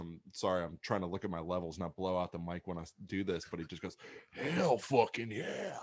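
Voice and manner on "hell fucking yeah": loud, rough, gravelly holler like a growl. Retelling what a man at the back of the crowd said, gravelly voice. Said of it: "he just has like a gravelly voice".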